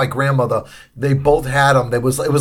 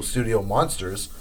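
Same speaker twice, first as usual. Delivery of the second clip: usual speaking voice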